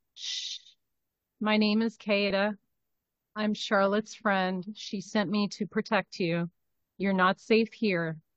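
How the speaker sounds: quiet, soft half-whisper, close to the mic. A player's character in a tabletop game speaks into someone's ear, half-whispering in his ear. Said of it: "I'm going to first kind of whisper in his ear".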